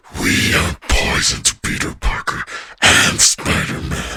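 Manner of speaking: very loud, booming, menacing villain voice. Showing what actually doing the character would sound like, Venom voice. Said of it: "If I were to actually do a Venom voice, I would be more like".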